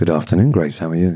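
put-on flirty phone voice. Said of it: "Give me your phone voice immediately".

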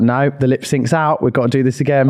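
ordinary delivery

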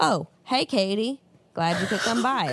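acted creepy father voice. Acting out a dad who answers the door: imitating a creepy dad. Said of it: "he is the dad who answers the door and is like".

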